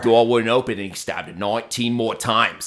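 put-on Australian accent. Retelling an australian true-crime show, imitating an australian accent. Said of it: "someone with an Australian accent be like".

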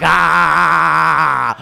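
loud, high scream. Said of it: "make a mad dash to the car".

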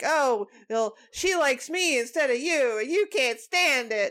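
whiny, complaining voice on every word. Imitating an actor's line from the fight scene: whiny Robin voice. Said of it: "he just sounds really whiny".

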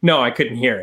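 put-on sarcastic tone. Retelling his reply to a reporter asking about fans booing: imitating a sarcastic reply.

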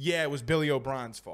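soft, sarcastic aside. After listing a team's penalty numbers, the speaker blames the coach, sarcastic. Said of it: "Are you being sarcastic?".

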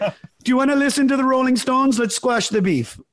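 poor put-on Canadian accent. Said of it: "my Canadian accent's not very good".

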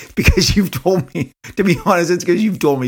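high-pitched speech through laughter. Talking about doing an impersonation of Todd, the speaker breaks into laughter. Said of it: "Sorry, I'm laughing".

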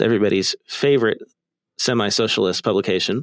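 ordinary talk, nothing marked

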